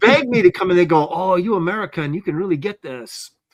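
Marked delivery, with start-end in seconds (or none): 1.1-3.3 bad, horrible, put-on fake Japanese accent. Joking about working in Japan, the speaker imagines studio staff begging him, in a horrible Japanese accent. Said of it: "That was a horrible Japanese accent".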